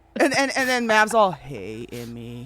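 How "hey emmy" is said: put-on sweet voice, lower and quieter. Retelling how Mav greeted Emmy: imitating Mav being sweet. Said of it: "he's all sweet with her".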